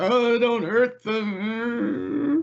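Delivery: crying with a very high, tearful voice. His attackers knocked unconscious, Warren Garrick speaks up: Warren Garrick crying. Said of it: "Warren Garrick is just like crying".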